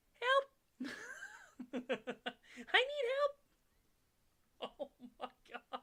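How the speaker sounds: tiny, very high squeak with swooping pitch. Retelling how a man was cursed to shrink, the speaker quotes his little squeaky voice. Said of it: "his little squeaky voice".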